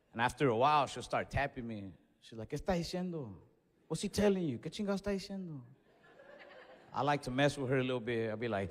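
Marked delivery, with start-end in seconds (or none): 2.5-5.6 put-on anxious, insistent, nervous old lady voice. Retelling how grandma taps her during the doctor's visit, imitating nervous grandma. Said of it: "the more nervous she gets".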